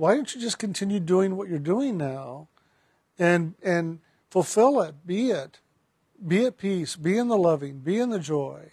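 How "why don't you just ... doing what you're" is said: ordinary delivery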